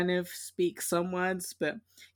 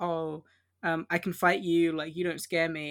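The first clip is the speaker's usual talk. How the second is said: normal talking voice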